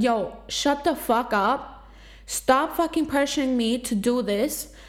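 acted, sharp, snapping, lashing-out tone. Speaker retells what they said to people pressuring them, retelling snapping at them. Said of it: "I snapped at them like that".

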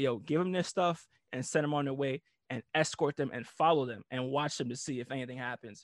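ordinary talk, nothing marked

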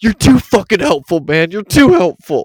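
furious shout at full blast, very loud and high. Retelling a store scene, the speaker quotes a tweaker yelling at a Walmart worker: imitating a yell. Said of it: "turned around and yelled".

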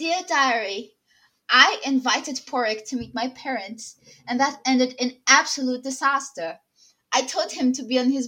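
loud, bad, fake British accent. Narrating a Bridgerton-style diary entry aloud, in a horrible British accent. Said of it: "I'm gonna add a horrible British accent to this".

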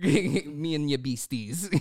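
poorly done put-on Caribbean accent. Quoting a boat captain from a game, in a bad caribbean accent. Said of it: "poorly Caribbean accented boat captain".

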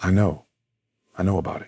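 whispering. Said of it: "he whispers in your ear".

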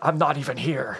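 put-on gruff action-hero voice. Quoting an action movie line: Indy voice. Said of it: "That sounded like Indy there".

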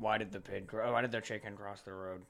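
low, flat, level monotone drone. Describing a game character's unfunny jokes, doing Geralt in a monotone. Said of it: "And he was just monotone".

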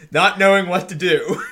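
loud laughing through the words.

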